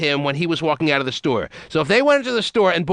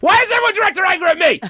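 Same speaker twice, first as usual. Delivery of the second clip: high, swooping yell, voice climbing across the line; 14 semitones higher, 4 dB louder than usual. Complaining that everyone directs their anger at him; yelling. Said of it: "why are you yelling?".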